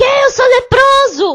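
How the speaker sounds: acted, high, loud, alarmed, disbelieving shocked shout. Retelling how a patient reacts on hearing the diagnosis: imitating a patient shouting. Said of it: "fica gritando".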